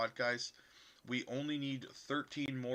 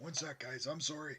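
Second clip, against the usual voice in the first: rough, hoarse voice, failing and nearly gone; 2 semitones higher than usual. Pausing to apologize to the guys after clearing throat: hoarse, losing voice. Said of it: "I got no voice".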